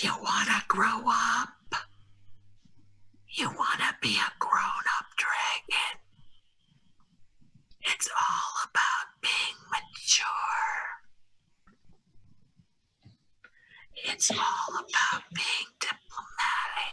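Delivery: hushed, whispered talking-object voice. Voicing one of the objects, urging a dragon to grow up: whispering as one of the objects. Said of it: "Tayanite's whispering, pretending to be the voice of".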